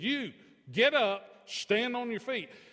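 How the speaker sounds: deliberate, loud, slow, high, commanding tone. Retelling how he looked at the speaker and commanded him to stand: retelling a loud command. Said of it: "he commands with a loud voice".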